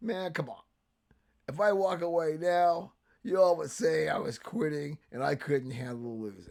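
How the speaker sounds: put-on country-style speaking voice, laid on. Quoting the coach on why he hasn't stepped away: McVay country voice. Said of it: "country voice he tries to use".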